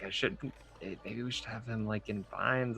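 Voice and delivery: hushed, half-whispered voice. Half-whispering to two party members in character about tying a prisoner: half-whispering in character. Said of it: "I guess I go back to whispering".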